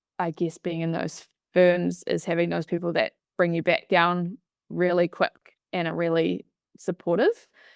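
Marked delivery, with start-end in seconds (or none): none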